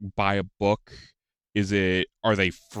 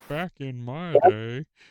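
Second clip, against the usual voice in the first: ogre character voice, raised pitch; 6 semitones higher than usual. Reminiscing about old game characters, dropping into an ogre voice. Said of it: "That was a pretty good ogre impression".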